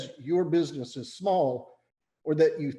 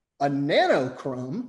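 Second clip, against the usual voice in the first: ordinary talk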